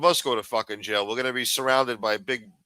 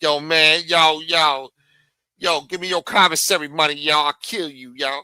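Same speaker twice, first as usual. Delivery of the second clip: loud, high-pitched, menacing tough-guy voice; 5 semitones higher, 7 dB louder than usual. Imitating an inmate demanding commissary money: imitating a threatening prison inmate. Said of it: "locked up with fucking, uh, Lameek and Taquan".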